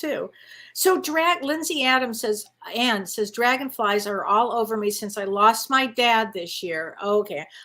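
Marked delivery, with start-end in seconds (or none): none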